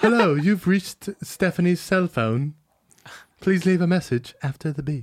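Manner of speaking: put-on British accent. Imitating a European girlfriend's voicemail greeting: imitating a British accent. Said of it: "She's busy eating crumpets".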